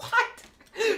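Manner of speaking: very high, stunned yelp on "what".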